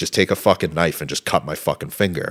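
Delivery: ordinary delivery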